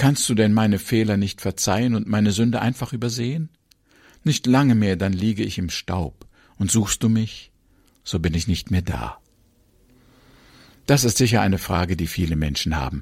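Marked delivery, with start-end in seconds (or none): none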